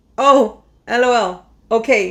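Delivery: mock short, clipped speech. Imitating own busy replies: imitating own curt replies. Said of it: "I answer super short".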